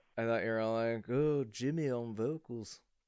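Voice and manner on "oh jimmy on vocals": very slow, put-on British announcer accent. Imitating the other speaker's band introduction: imitating a British accent. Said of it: "That's what I sounded like".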